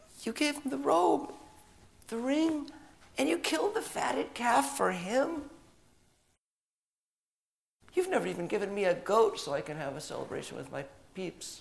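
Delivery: mock voice breaking up, cracking very high. Retelling the older son complaining to his father, retelling a cracking voice. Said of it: "his voice cracks, just like mine".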